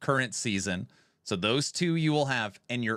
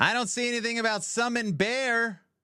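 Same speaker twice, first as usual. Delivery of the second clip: very high-pitched, shrill yelling shout; 12 semitones higher than usual. Reading through patch notes and noticing something missing, yelling. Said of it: "Sorry for yelling".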